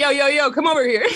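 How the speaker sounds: put-on high, hollering call-out. Retelling senior boys calling out in a hallway: imitating boys hollering. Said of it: "start, like, hollering at me".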